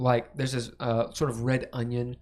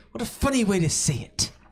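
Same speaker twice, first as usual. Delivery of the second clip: murderously angry, barely hidden rage, higher pitch; 7 semitones higher, 4 dB louder than usual. Voicing a character angry at a player's pronunciation: furious, barely hidden rage. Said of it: "there's an intense rage".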